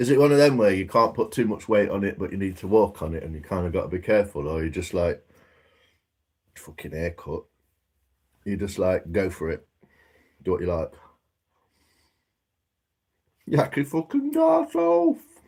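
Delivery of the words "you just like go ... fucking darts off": speaking through a full mouth of food. Giving a mate advice, talking with a mouthful of porridge. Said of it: "I've got a mouthful of porridge".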